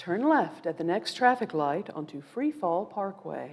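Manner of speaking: mock calm navigation device voice. Imitating a smartphone GPS giving directions, in a calm GPS phone voice. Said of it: "A nice, calm phone voice says things like".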